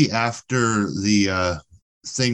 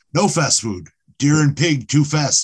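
primitive caveman character voice, pitched up; 5 semitones higher than usual. Retelling what Og says about fast food: Og voice. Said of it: "and Og's like".

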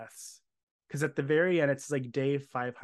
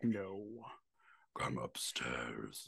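deep, very low, hushed, menacing sinister murmur; 14 semitones lower, 9 dB quieter than usual. Retelling the voice the characters hear calling them upstairs, put-on sinister voice. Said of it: "Because it's a sinister voice".

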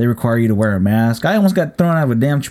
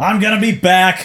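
high-pitched hollering yell; 8 semitones higher than usual. Retelling calling back through the closing door at Chipotle, retelling a yell. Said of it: "i'm just yelling".

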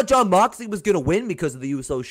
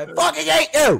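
very high, loud, shrill all-out yelling; 11 semitones higher, 4 dB louder than usual. Yelling at Kenny after a shocking result: yelling loudly. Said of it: "I'm yelling at you so loud right now".

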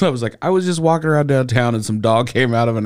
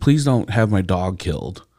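mock pleading, begging voice; 4 semitones lower than usual. Retelling how a dog's owner pleaded on the phone: imitating someone begging. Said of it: "he's just, like, begging me".

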